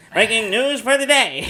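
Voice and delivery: put-on loud, high, old-timey vintage radio news announcer voice. Joking with a co-speaker about having news from the future, old-timey radio voice. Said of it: "with old timey radio voice".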